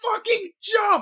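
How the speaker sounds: very high, fed-up, exasperated yell. Retelling a husband at the bottom of a bungee jump: imitating someone yelling. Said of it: "just yelling".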